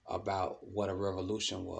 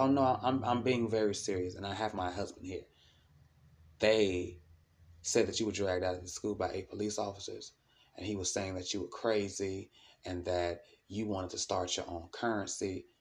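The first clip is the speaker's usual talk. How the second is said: plain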